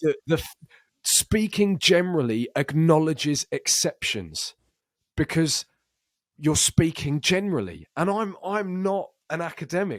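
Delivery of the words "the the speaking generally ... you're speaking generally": angry, heated, animated rant in full flow. Describing yelling at a screen, the speaker launches into a ranting meltdown. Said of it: "performed the exact meltdown".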